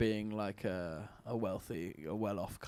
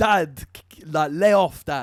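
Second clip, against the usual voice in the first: high, loud, whiny chav drawl. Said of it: "kids were talking like this in it".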